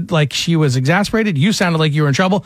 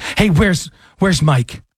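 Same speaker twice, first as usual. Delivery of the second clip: put-on exasperated, fed-up woman at wit's end. Retelling a phone call from a worried woman: imitating an exasperated woman. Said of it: "this woman, she's exasperated".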